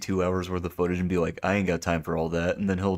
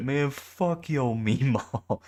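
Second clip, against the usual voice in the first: high-pitched, drawn-out, jeering trash-talk tone; 6 semitones higher than usual. Acting out a random guy in voice chat insulting someone's meemaw: imitating a random voice chat guy. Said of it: "some random guy in voice chat".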